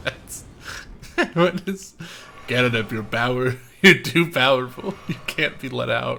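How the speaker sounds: talking while cracking up laughing. Watching a cannon knock an enemy far away: laughing while talking. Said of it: "I'm gonna need a minute".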